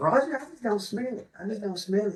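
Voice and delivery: put-on funny, kooky old codger voice, high-pitched. Retelling what a kooky old man at the campsite said: imitating Jack's funny way of talking. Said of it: "he talks hilarious".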